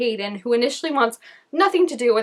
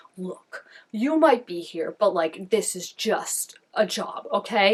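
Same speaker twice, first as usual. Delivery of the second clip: mock manly voice, quieter; 3 semitones lower, 4 dB quieter than usual. Retelling a movie scene, quoting the boxer Caden: put-on man voice. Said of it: "he gets the man voice".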